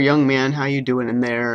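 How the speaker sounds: ordinary talk, nothing marked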